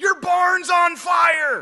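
very loud, very high, stretched, drawn-out scream. Retelling how a neighbor jumped out of his truck: imitating a neighbor screaming. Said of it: "he screams".

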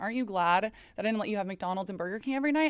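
put-on cute, snarky, teasing tone. Retelling how mom teases about fast food: imitating mom's cute snarky tone. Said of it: "in, like, kind of, like, a cute, like, snarky way".

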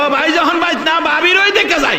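sly, high-pitched called-out voice.

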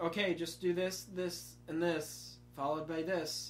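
dull, flat, sleep-inducing droning monotone. Speaker describes a boring coding teacher, doing the teacher's boring monotone. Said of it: "the very monotone voice that makes you want to sleep".

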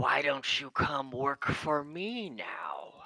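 swooping telepathic voice. Game master voices a presence speaking inside a player's mind: voice speaking in your mind. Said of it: "you hear it say".

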